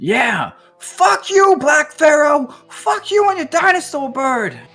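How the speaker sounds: shrill, very high, loud, all-out defiant scream. A game narrator gives the line of Charles, adrenaline going, as he is screaming out. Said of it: "He just screams out".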